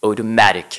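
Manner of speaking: automatic with next-to-last syllable ma stressed. French explanation of english word stress, stress on 'ma' in 'automatic'. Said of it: "l'accent tonique va systématiquement tomber sur l'avant-dernière syllabe".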